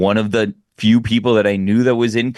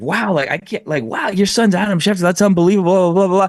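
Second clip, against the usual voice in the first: rapid, high-pitched, rattled-off babbling; 9 semitones higher than usual. Retelling own words on meeting adam schefter's mom: imitating own rapid talking. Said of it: "talking quickly".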